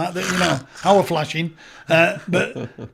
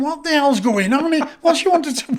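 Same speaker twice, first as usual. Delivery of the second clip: mock hollered, high-pitched shouting; 9 semitones higher than usual. Retelling a moment on a prison wing: imitating own past shouting. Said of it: "And I'm shouting".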